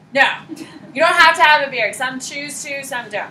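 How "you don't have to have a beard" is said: loud, fast, emphatic insistence. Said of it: "But you don't have to have a beard".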